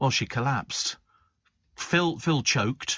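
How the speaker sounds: plain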